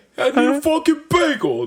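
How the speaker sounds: put-on New York street yell. Describing retired New Yorkers shouting across the street, imitating a New York guy yelling. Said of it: "yelling across the street as if they're still in New York".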